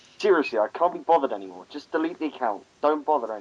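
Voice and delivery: faintly irritated, mildly annoyed delivery. Reading text aloud as asked, in a mildly annoyed voice. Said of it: "a voice that sounds mildly annoyed".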